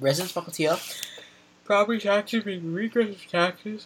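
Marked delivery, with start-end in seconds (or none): 1.7-3.9 talking through a yawn, words stretched. A speaker giving an opinion, yawning while speaking. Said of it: "pardon my yawn".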